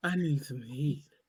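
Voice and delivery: sexy, sultry voice, very low, slow, drawn out. Showing how a friend talks: imitating a sexy auntie voice. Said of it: "this what she be doing".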